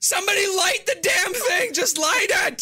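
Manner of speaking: very high, loud, shrieking scream. Voicing a character who spits something far away: screaming.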